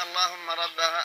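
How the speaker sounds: ordinary delivery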